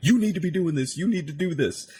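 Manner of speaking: high-pitched screaming. Retelling voice actors at a con calling out from the stage: imitating people screaming. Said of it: "started screaming, like".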